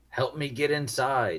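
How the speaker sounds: calling out with urgency. Voicing a character who shoots at the players and demands help getting inside: yelling. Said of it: "he yells".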